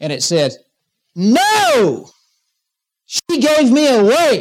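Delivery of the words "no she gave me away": very high, very slow, drawn-out shriek. Retelling what came out of a quiet woman in church, imitating a scream. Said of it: "this scream came out of this woman".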